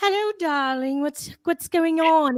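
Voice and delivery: put-on English accent. Retelling answering her daughter's call on English accent day, in a put-on English accent. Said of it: "it's English accent".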